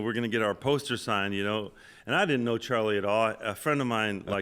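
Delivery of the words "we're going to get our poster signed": usual speaking voice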